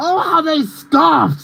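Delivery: put-on yell, high and slow.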